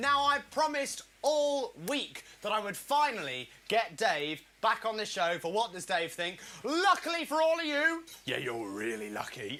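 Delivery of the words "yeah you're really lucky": very low, deep puppet character voice. Show host introducing a segment, slipping into a puppet voice. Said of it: "I did the voice on the wrong".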